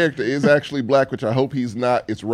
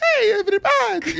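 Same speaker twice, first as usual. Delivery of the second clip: put-on cartoon toucan voice with Caribbean accent. Imitating how a cereal mascot talked: Toucan Sam voice with Caribbean accent. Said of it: "It was like a Mario, a Caribbean".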